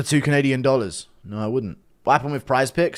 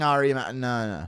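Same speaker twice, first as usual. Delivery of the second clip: usual speaking voice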